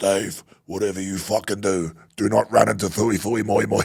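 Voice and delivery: hoarse, husky, stern voice. A player recalls his coach's video-session warning, imitating Gary Last's husky voice. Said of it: "he's got a real husky voice".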